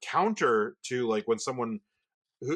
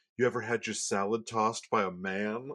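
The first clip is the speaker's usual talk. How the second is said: acted-out whisper. Retelling what a man whispered, coming up behind them at work: retelling a whisper. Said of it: "he whispers in my ear".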